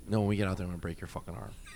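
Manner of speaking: calm quiet delivery. Bouncer retells following a man out of the bar, retelling saying it calmly. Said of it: "I said it so calmly".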